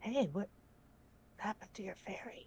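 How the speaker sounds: very quiet, hushed, sly whisper. Leaning in while being carried down stairs, asking secretly: speaking very quietly. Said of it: "very quietly so that they don't hear me".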